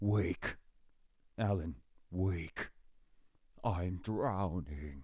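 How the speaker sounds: very slow voice, each word drawn out. Talking about Alan Wake, the speaker does the Shadows voice for fun. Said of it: "it's funny to do the voice".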